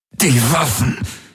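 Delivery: high, panted gasp through gritted teeth. A man in pain gasps through clenched teeth. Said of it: "keuchte er mit zusammengepressten Zähnen".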